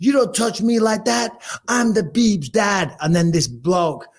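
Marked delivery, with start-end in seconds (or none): 0.0-3.0 put-on wild, drunken screaming, high-pitched. Retelling a story about a man being a pain: retelling a scream. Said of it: "he was screaming".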